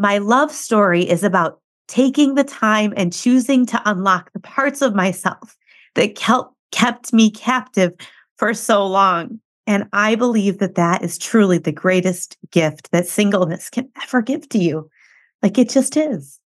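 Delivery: choked-up, emotional voice, breaking, on the verge. Reading aloud a passage the listener wrote, choked up. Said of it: "I'm choked up reading this out loud".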